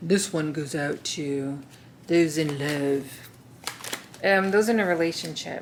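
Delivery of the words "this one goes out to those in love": deep, slow, on-air radio DJ voice. Introducing a section for those in a relationship, radio DJ voice. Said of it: "I feel like a radio D J".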